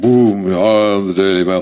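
mock huge, big, booming, drawn-out voice. Speaker personifies a newspaper as a scary figure, Daily Mail big booming voice. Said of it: "that's got a big booming voice".

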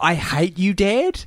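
put-on slow, drawn-out, bratty child's scream. Recounting a boy on a plane denied a window seat: retelling a child's scream. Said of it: "He was screaming".

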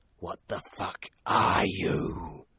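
hissing, serpent-like monster voice. Reading a serpent-bodied creature's words to the narrator it is coiled around, hissed. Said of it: "she hissed".

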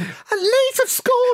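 put-on squeaky, very high-pitched young voice. Retelling the match, the speaker's younger self says Leeds have scored: squeaky early-20s voice. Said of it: "squeaky early 20s me going".

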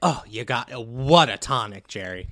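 very loud, booming, belted-out delivery. Retelling a talk-show exchange about water: imitating Bill Maher. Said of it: "And Bill Maher's like".

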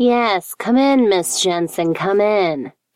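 slow, nasal voice. Someone inside invites Miss Jensen in, nasally high-pitched voice. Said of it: "came a nasally, high-pitched voice".

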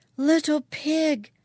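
maddened, wild, shrill, loud scream. A mother in a sleigh screams in front of her children; screaming. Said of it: "screamed the woman".

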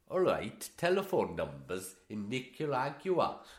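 poor fake Welsh accent. Trying to sound welsh, the speaker introduces the next topic in a bad welsh accent. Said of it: "I can't do a Welsh accent".

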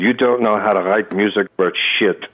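huge, thick put-on German accent. Quoting the first words of the man whose music they studied, thick German accent. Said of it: "in a huge, thick German accent".

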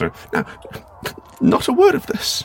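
very high, slow, swooping put-on disguised voice. In a scene about wearing a mask as a disguise, speaking in a different voice. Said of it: "like a different voice".

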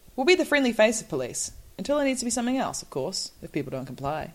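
quick, put-on motherly reading voice. Reading out Bush's quoted warning to people who don't stick to the rules, read like a mother. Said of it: "you read it like a mother".

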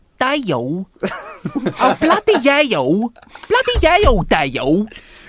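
overdone put-on Cockney, very high, swooping, loud, sing-song. Showing how he put loads of Y's in words in the spin-off, in Rodney's affected Cockney accent. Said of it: "he had to affect a Cockney accent".

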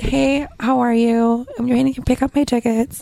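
low, sexy little rasp. Explaining how to sound when picking up tickets, demonstrating a sexy little rasp. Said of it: "get like that little like sexy rasp. And you just be like".

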